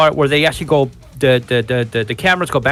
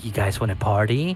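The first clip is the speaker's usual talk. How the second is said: low, seductive, sexy voice; 5 semitones lower, 8 dB quieter than usual. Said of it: "she comes out all sexy".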